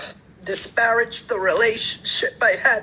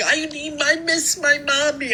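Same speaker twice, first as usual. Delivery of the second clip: put-on high, whiny, crying little baby voice; 5 semitones higher than usual. Retelling someone's complaint, mocking little baby voice, crying. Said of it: "with her little baby voice, crying".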